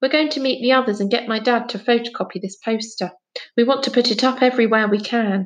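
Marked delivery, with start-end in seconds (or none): none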